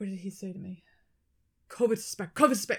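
loud, panicked, frantic, losing-his-mind alarm. Retelling how an anesthesiologist reacted at a door: imitating someone panicking. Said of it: "he was losing his mind over it".

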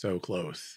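put-on deadpan sarcasm. Retelling his line from a scene watched three times, mimic deadpan sarcasm. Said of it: "so all like matter of factly, just sarcastic".

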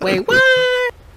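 fake squeaky voice, very high and loud. Announcing a new show segment called Wait What: put-on high-pitched voice. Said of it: "With that high-pitched voice?".

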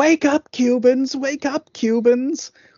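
put-on, very high screaming call, repeated. Retelling how a woman ran up and down the street: imitating someone screaming.

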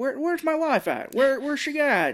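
very high, tripping over words. Retelling a movie scene about a missing wife: Jimmy Stewart voice. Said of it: "It's Jimmy Stewart, so he has his voice".

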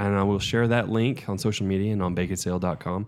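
ordinary delivery

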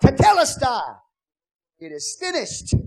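very loud, high, triumphant victorious shout. Telling of a victorious general on the mountains, retelling a triumphant shout. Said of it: "You could have heard him shout".

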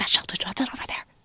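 urgent, breathy whisper, straining to stay quiet. Retelling how Jason quietly whispered when he spotted someone: imitating Jason whispering excitedly. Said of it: "he's trying so hard to whisper".

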